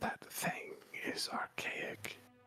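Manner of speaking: breathy, whispered delivery. Describing a scene to the players, then voicing him: whisper. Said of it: "you hear an actual whisper as he says".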